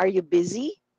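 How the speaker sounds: question-like rise in pitch at end of busy. Teaching yes-or-no question intonation in English, rising pitch on busy. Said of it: "pataas ang intonation".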